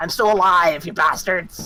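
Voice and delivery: put-on goblin voice. Using a ventriloquism spell to mimic a goblin, goblin voice. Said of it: "mimic the voice of a goblin".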